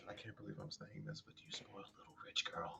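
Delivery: barely audible, very quiet whispered mutter under the breath. Speaking in character about a companion, muttering under breath. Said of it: "Under my breath".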